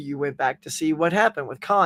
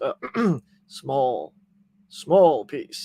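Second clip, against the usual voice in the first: put-on tough-guy voice, dropped an octave; 4 semitones lower than usual. Retelling a gangster scene, imitating Spock's tough lower voice. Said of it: "Spock sort of change the octave in his voice to sort of become tough".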